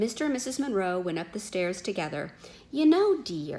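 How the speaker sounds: ordinary delivery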